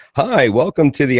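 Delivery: high dj announcer voice. Showing the radio habit they've worked months to lose, radio dj voice. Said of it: "I sound like a stripper D J guy".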